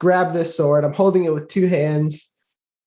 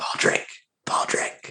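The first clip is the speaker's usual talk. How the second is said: soft, breathy whisper, barely voiced. Startled by growling, trying to push a snoring companion awake; whispering. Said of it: "I'm whispering".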